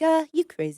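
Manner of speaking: high, fake British accent, done badly. Describing British guys, the speaker quotes them in a bad British accent. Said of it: "that was a bad British accent".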